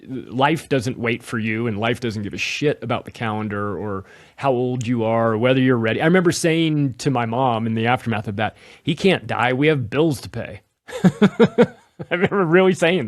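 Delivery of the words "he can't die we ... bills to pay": ordinary delivery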